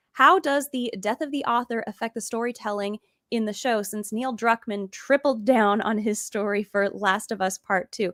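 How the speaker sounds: ordinary talk, nothing marked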